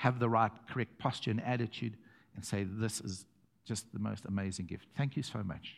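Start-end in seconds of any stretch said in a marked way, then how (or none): 2.6-5.8 soft, gentle, tender and sincere. Showing how to thank a giver: gentle tenderness. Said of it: "Say it with gentle tenderness".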